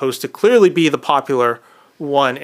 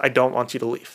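put-on panicked, frightened whisper, quieter; 2 semitones lower, 5 dB quieter than usual. Retelling a movie scene where a character begs another to stay: imitating a panicked whisper. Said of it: "out of panic, like, almost just whispers it".

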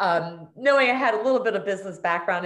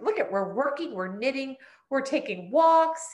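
play-acted eagerness, bubbling over, high excited chatter; 6 semitones higher than usual. Retelling what was said to mom about the shop plan: imitating own past excitement. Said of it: "we were so excited for this".

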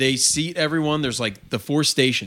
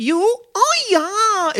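put-on high-pitched anime girl voice, higher and louder; 5 dB louder than usual. Retelling a chef's call while flipping shrimp, imitating a high-pitched anime girl voice. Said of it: "changes it to a high-pitched, almost anime girl".

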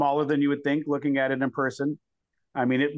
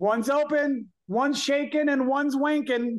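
put-on very high, stretched-out, drawn-out yell; 11 semitones higher than usual. Retelling what a bathroom attendant yelled out: imitating someone yelling. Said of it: "yells out".

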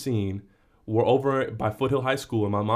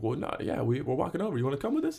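put-on, overly friendly, all buddy-buddy sing-song; 4 semitones higher, 5 dB quieter than usual. Retelling inviting a stranger in a car to a party: imitating a very friendly tone. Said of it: "hella friendly".

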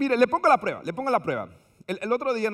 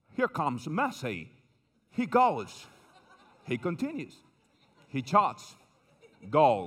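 put-on low British football commentator voice and accent; 6 semitones lower, 3 dB quieter than usual. Imitating a World Cup match narrator calling the play, in a British accent. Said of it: "y con acento británico".

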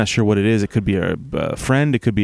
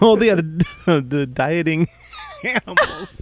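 breathless with laughter, very drawn out, swooping; 7 semitones higher than usual. Recalling the topic after laughing too hard: laughing while talking. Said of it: "I've been laughing so hard".

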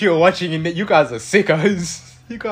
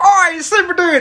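very loud scream, much higher; 14 semitones higher, 6 dB louder than usual. Retelling how a man screamed at them across the street, the speaker is retelling a scream. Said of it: "he just screamed like what Chris said".

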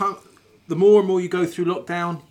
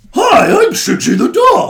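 very loud, high, squeaky, belted dog-puppet voice; 7 semitones higher, 11 dB louder than usual. Opening a puppet show, introducing yourself as the dog: Shigsy the dog puppet voice. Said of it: "our first character on the puppet show. It's Shigsy the dog".

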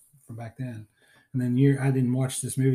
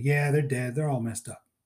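imitated Pittsburgh accent. Retelling a police chief's lines from a movie: imitating a Pittsburgh accent. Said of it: "he's got the great, great Pittsburgh accent".

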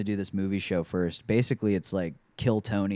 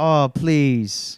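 high, loud, pleading begging tone; 6 semitones higher, 8 dB louder than usual. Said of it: "begging their like, drummer to stay".

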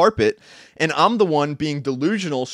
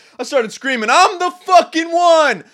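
put-on scream, higher, louder, slower; 13 semitones higher, 6 dB louder than usual. Speaker recounts throwing hands in the air and yelling: retelling a scream. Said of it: "I started screaming".

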